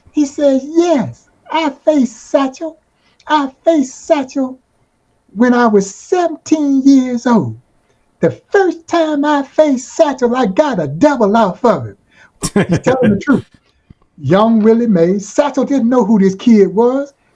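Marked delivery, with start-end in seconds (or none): 0.6-11.9 high-pitched, lit-up, bright, eager voice. Retelling Willie Mays answering a radio host about facing Satchel Paige: high-pitched Willie Mays voice. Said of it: "he had a very high-pitched voice".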